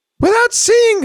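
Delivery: squeaky cartoon mouse voice impression. Quoting Copilot's reply in a Mickey Mouse voice. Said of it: "I don't know why it sounds like Mickey Mouse".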